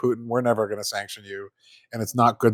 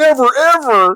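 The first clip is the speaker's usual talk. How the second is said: mock toddler tantrum, much higher and louder; 8 dB louder than usual. Mocking an official response about Alaska, mock toddler hissy fit. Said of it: "like you're a little toddler having a hissy fit".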